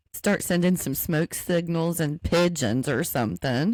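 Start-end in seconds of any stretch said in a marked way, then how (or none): none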